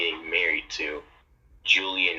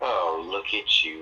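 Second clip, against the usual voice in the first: put-on arrogant tone. Retelling how an arrogant person walks in and speaks, mimicking an arrogant voice. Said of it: "some freaking arrogant shit comes in and says".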